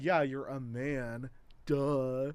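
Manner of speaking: put-on mocking, taunting tone. Retelling making fun of a classmate's name as a kid: imitating own past mocking taunt. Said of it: "I made fun of her name".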